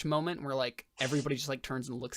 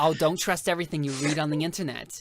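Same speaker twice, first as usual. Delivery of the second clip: put-on 1950s diner waitress accent, louder; 7 dB louder than usual. Answering a diner looking over his menu, in a 1950s waitress accent. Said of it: "randomly did like a 50s waitress accent".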